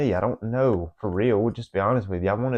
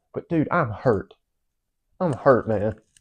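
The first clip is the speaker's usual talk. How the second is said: crying while talking, through tears. Late at night with family asleep, talking on YouTube, crying while talking. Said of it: "I'm literally on YouTube crying right now".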